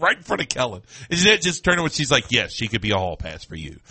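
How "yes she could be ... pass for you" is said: very low, soft, dismissive, patronizing tone. Speaker retells a woman's reply to a man's question, retelling a dismissive yes. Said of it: "But the way she said it meant, like, it's never going to happen".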